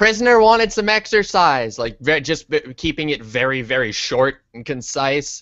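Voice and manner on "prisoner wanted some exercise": shrill, very high shout over loud noise. In character, answering a worker over furnace noise: shouting over furnace noise. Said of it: "I'm gonna shout".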